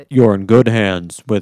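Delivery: booming put-on bass voice, very loud, really deep. Asked to do a character's line, really deep character voice. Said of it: "do the really deep voice".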